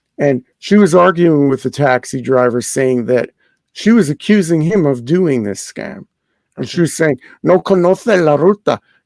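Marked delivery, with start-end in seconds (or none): 7.4-8.8 put-on Castilian Spanish accent, c in conoce as th. Retelling a woman arguing with a taxi driver, in a Spanish accent with theta. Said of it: "in her Spanish accent with the theta".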